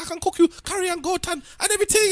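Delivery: very high, loud, fake Jamaican accent. Imitating female comedians dressing up in little videos: fake jamaican accent. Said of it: "And just putting on fake accent".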